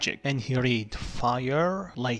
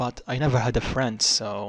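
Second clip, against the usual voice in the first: ordinary delivery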